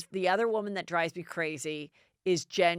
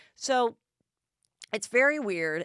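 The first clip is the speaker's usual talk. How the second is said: plain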